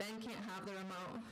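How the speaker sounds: ordinary delivery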